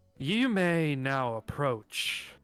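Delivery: loud, booming, distant, detached announcer voice. Narrating a game, the storyteller voices a voice the players hear: loud, booming, detached voice. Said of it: "loud, booming, detached voice say out".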